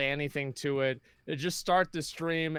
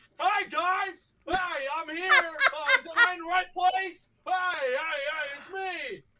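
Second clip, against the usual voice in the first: mock shrill shouting, way up high; 4 dB louder than usual. Retelling how someone suddenly showed up at a bar: imitating Lucari yelling.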